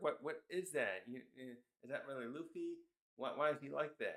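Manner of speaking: ordinary delivery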